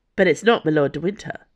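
plain

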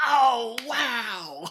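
mock very high, loud, hammy, overacted excitement. Retelling the character clapping his hands: imitating excited overacting. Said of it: "Just beautifully overacting".

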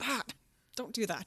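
play-acted, quick, high-pitched mild scolding yell. Retelling reacting to a podcast while raking: retelling yelling at a rake. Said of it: "yelling at my rake".

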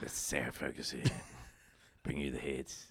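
put-on smoky raspy voice. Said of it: "I got that smoky tone".

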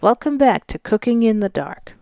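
very doctoral, official-sounding voice. Welcoming everyone back to Cooking in the Dark: very doctoral and official. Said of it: "That sounded very doctoral and official".

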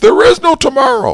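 high, loud shouted voice. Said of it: "I think I nailed the voice".

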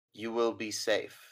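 gentle, comforting, reassuring, soothing voice. Narrating a scene, speak as a voice addressing the listener, comforting voice. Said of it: "a comforting voice just says".

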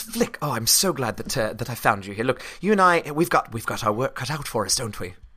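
put-on English accent. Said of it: "I've caught your accent".

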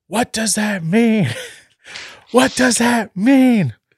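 very high, shrill, loud scream. Retelling how someone in the bathroom suddenly started screaming, retelling a scream. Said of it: "she just starts screaming".

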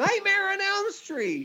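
very high, sing-song, swooping shriek. Retelling a son screaming from the bathroom: imitating Roland screaming. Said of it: "he screams from the bathroom".

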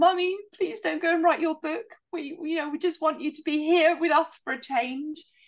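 mock, very high, tearful, pleading child's voice. Retelling what the children said on Saturday nights: imitating crying children. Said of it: "my children in the house crying, going".

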